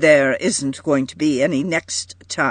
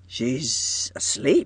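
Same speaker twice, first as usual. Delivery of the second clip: puzzled half-whisper, hushed and breathy; 2 semitones lower, 7 dB quieter than usual. John reaches over the bed railing to touch her hair: puzzled murmur. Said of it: "he murmured in a puzzled way".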